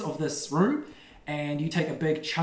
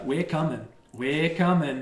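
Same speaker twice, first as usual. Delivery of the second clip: menacing, foreboding monster voice. Voicing creatures moving down a corridor: ominous creature voice. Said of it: "very ominously".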